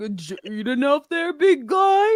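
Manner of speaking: mock elderly man voice. Imagining how Gord talks during the fight with Pumpkin, voicing Gord. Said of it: "that is fully how I expect Gord to talk".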